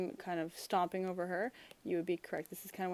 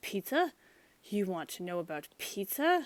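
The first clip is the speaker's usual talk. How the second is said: play-acted, sudden, furious, raging angry yell; 3 dB louder than usual. Retelling the story's scene, the speaker acts out Hyde: mock-angry Mister Hyde outburst. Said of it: "Mister Hyde suddenly gets very angry".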